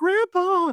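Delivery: very high, panicked cry. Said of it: "those girls were like".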